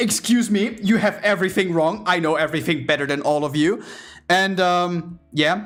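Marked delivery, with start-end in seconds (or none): 0.0-3.8 put-on cocky voice. Retelling a man complaining about his payslip, imitating a cocky customer. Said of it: "he's already behaving cocky".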